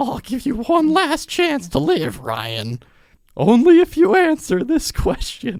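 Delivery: shrill, very high, swooping goblin creature voice. Voicing a beast that threatens Ryan with a question, in a goblin voice. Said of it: "It talks like a goblin".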